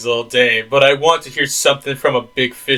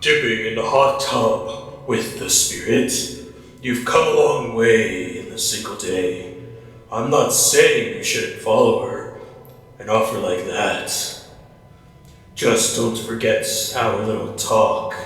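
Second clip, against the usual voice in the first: deep, breathy, half-whispered narrator voice; 3 semitones lower, 4 dB quieter than usual. Reading a game character's lines aloud in a deep ocean guy voice. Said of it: "I gotta do deep voice ocean guy again".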